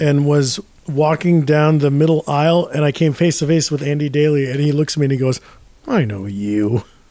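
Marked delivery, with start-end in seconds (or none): 5.9-6.8 very low, muttered under the breath. Retelling a stranger's words on a plane: imitating someone muttering under his breath. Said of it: "under his breath".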